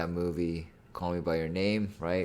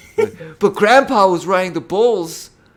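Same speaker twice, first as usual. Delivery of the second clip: whiny whine, very high and loud; 14 semitones higher, 18 dB louder than usual. Imitating a movie line to mock the acting: whiny Timothée Chalamet imitation. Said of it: "You sound like a whiny little bitch".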